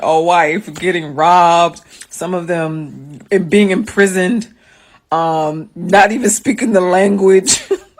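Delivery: talking through laughter. Commenting on footage they have watched, the speaker is laughing while talking. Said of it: "I'm gonna stop laughing".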